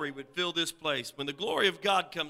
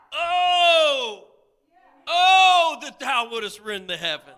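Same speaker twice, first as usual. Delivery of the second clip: very loud, very high pleading cry, long drawn "oh"; 9 semitones higher, 10 dB louder than usual. A preacher voicing the verse's speaker, acting out a cry. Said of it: "like a cry out".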